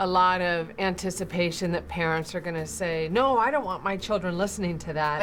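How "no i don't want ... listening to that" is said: normal talking voice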